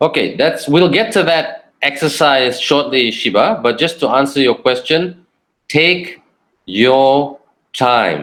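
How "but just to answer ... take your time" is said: very slow, patient, unhurried pacing. Answering a question about pausing when talking, very slow. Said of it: "Notice I'm speaking to you in a very slow tone".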